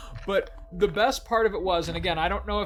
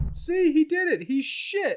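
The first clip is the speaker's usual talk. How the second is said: put-on high, drawn-out yelling; 10 semitones higher, 3 dB louder than usual. Retelling rolling down the car window and yelling, retelling a yell. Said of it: "I roll down the window and I yell".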